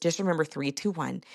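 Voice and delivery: ordinary talk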